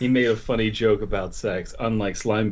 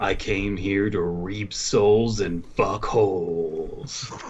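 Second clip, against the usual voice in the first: slow, deep, rasping gravelly voice; 2 semitones lower than usual. Suggesting a line for Reaper mains to say in team chat, deep, gravelly voice. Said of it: "in a deep, gravelly voice say".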